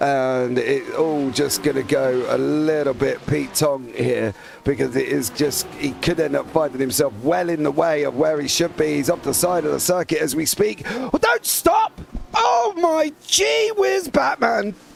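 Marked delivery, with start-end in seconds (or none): 10.8-14.7 panicked, shocked, very high, drawn-out alarmed cry. Commentating as a car goes off the circuit: panicked shocked exclaiming. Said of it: "you sounded like you needed the defibrillator".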